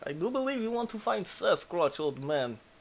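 put-on Russian-accented voice. Talking about finding sasquatch, the speaker slips into a russian accent. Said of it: "I've not done the Russian voice in forever".

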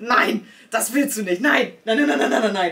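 loud, frantic, alarmed, panicked outburst. Telling how all bookings suddenly went live, the speaker reenacts their own panic. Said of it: "ich habe richtig Panik gekriegt".

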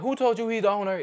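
play-acted furious outburst, very high pitch. Retelling how she reacted when a customer asked for the owner: acting out super pissed-off outburst. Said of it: "she just got super pissed off".

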